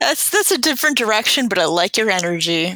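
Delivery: plain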